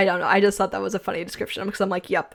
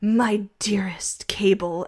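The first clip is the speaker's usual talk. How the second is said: put-on, overly dramatic letter-reading voice. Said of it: "just be overly dramatic and be like".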